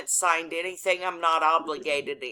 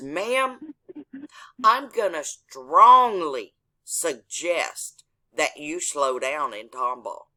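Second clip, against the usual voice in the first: mock grave, stern police officer voice; 4 dB louder than usual. Retelling a police officer leaning in with a warning: imitating a stern cop. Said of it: "he gets real stern".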